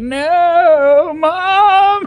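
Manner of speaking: high, loud, panicked, freaking-out crying. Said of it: "fucking freaking out".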